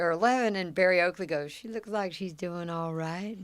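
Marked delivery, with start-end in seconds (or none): 1.5-3.4 put-on soft quiet Georgia accent. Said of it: "Real soft spoken Georgia accent".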